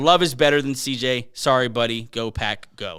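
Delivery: ordinary delivery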